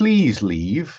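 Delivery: mock-polite announcer voice, put-on politeness. Describing an announcement that repeats in other languages, imitating it mock-politely. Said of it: "it says politely".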